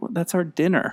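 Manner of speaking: very gentle, subdued, very soft, hushed murmur. Quoting the mother's line from the movie scene: very softly. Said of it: "She just kinda says very softly".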